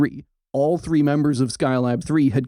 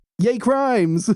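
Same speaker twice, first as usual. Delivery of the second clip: put-on enthusiastic cheer full of gusto, pitched up; 9 semitones higher than usual. Acting out the astronauts cheering on a recorded call: imitating astronauts, with gusto. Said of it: "repeat it with gusto once more".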